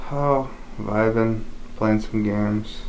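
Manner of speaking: downcast, listless, sad, quiet and low-energy. A podcast co-host answers how everyone is doing this week, sad, low-energy voice. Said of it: "Why do you sound so sad?".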